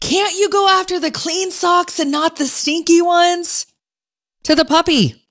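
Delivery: shrill, very high yell. Retelling what she yelled at the puppy, retelling own yell. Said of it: "And I yelled".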